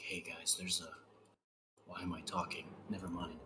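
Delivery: hushed whisper. Planning to hide from a creature, the speaker whispers to the group. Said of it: "just like whisper like".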